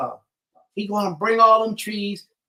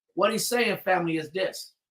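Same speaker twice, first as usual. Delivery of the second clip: usual speaking voice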